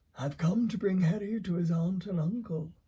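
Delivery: said calmly. A father reading a bedtime story aloud gives a character's line calmly. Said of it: "said [name] calmly. / said [name] calmly. / Daddy reading a bedtime story to W: [name] Potter and the Sorcerer’s Stone, Chapter 1 (The Boy Who Lived) / Daddy reading a bedtime story to W: [name] Potte".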